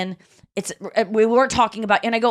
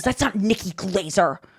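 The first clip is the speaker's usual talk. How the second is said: mock angry, irritated, scolding tone; 3 semitones lower than usual. Retelling what a guy in front of her said to his wife: imitating a man being mad. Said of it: "he was like mad at her".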